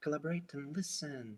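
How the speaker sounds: very quiet, throwaway mutter under the breath. Describing a film scene, the speaker acts out a crowd extra mumbling under the breath. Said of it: "just mumbles under his nose".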